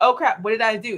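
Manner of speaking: ordinary talk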